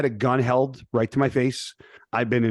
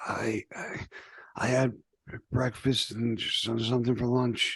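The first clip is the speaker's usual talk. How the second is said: slow, barely alive, dying-sounding voice; 7 dB quieter than usual. Retelling a phone call, quoting her dad's answer, imitating a dying-sounding voice. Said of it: "like he sounded like he was dying".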